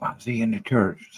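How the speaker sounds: soft, hushed half-whisper under the breath. Retelling what someone at church said about a tattooed man: imitating someone half-whispering. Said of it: "whispering, like".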